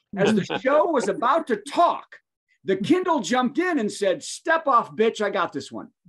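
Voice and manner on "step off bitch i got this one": put-on Bronx accent voice. Retelling the Kindle jumping in after an Alexa command, Alexa with a Bronx accent. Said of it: "changed Alexa's voice on the Fire to Bronx".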